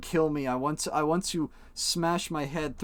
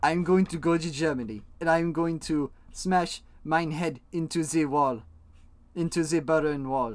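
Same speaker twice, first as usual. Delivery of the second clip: shoddy, bad put-on German accent. Acting out what Kato would say, Kato in a bad German accent. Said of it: "Using my shitty German accent".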